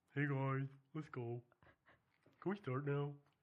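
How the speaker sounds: put-on dog voice. Starting a recording with the others: dog voice. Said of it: "This is my dog voice".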